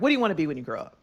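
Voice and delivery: grumpy, sullen, mad, moody tone. Retelling a movie scene where Aziz Ansari talks to a kid: imitating a mad, moody Aziz Ansari. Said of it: "he's just all mad and moody".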